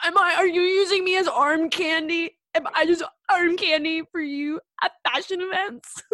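very loud, high, tearful crying out. Retell how Tommy confronts the other man outside, imitating Tommy crying. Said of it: "He's crying".

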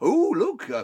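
very loud, projected voice. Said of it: "and this is very loudly".

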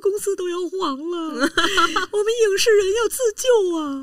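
mock tearful whining tone. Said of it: "李静儿哭了".

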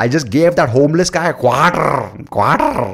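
heavy put-on Indian accent, rolled Rs, loud and high. Imitating people he has come across: imitating a strong indian accent. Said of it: "with ninety-nine percent Indian accent".

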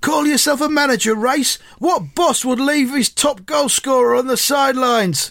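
acted shouting, pitched high. Retelling a story, acting out a man shouting up to the manager at a window, retelling a shout. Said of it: "Brinsden shouts up at Roy".

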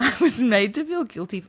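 talking through laughter. Reading aloud an account of an old job, laughing while speaking. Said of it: "Why am I fucking laughing?".

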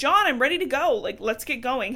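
acted-out screaming, loud over others. Recapping a scene, the speaker acts out a shackled prisoner impatiently yelling to leave; retelling a scream. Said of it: "He's like screaming over everybody".

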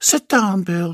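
seductive voice. A narrator reads a woman's line to a man, in her most seductive voice. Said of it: "she asked in her most seductive voice".

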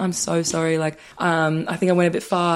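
ordinary delivery

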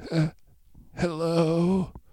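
feeble, weak call, drawn-out hello. Reading a story aloud, a voice on a recording calls out: deep voice calling out weakly. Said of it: "A deep voice calls out weakly".

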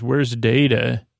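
ordinary talk, nothing marked

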